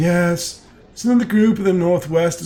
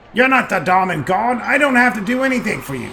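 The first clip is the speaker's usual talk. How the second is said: snarling, snarled delivery; 4 semitones higher than usual. A grimy man in a cell answers the one peering at him, snarling. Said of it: "he snarls at you".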